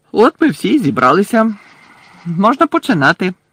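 merry, jovial, cheerful, high and sing-song. Reading a character addressing the gathered champions; cheerful. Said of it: "весело промовив Бекмен".

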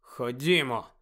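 barely audible mutter. Backing away from the platform, he urges the others on: barely audible mutter. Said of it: "пробурмотів він ледь-ледь чутно".

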